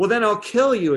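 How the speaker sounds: loud, angry outburst.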